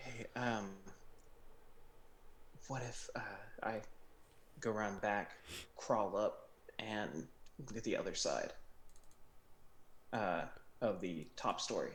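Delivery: hushed, soft, quiet voice. Planning with the group while guards are nearby, in a hushed tone. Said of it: "in a hushed tone".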